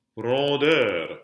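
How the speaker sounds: rondeur, last syllable -deur stressed heavily. Reading a list of French words ending in -eur: stress on last syllable of rondeur. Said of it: "putting all that emphasis on the last syllable".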